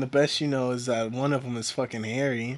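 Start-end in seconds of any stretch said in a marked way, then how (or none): none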